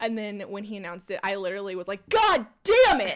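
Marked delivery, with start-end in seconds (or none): 2.1-3.2 very high, shrill, raised screamed outburst. Retelling a reaction to an announcement: retelling own scream. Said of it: "I screamed it".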